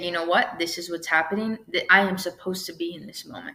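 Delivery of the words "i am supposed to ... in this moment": ordinary talk, nothing marked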